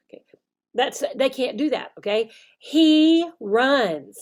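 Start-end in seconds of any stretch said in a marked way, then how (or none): 2.6-4.2 very slow, precise, each word set apart. Showing how to speak to them with nothing extra, very slow and precise. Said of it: "So speak slowly".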